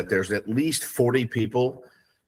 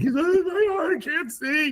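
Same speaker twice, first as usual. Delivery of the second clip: put-on very high, whiny, whining child voice. Retelling how he whined while getting eye drops: imitating whining. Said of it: "He's screaming. He's whining".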